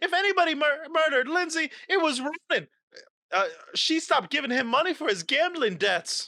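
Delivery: distressed, very high-pitched outburst. Voicing a suspect accusing someone of murder: upset. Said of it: "now she's getting all upset".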